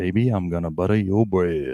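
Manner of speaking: put-on, deep, dropped voice, showing off. Speaker shows off the deeper voice they have today, in a deeper voice. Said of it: "I could do some really cool things".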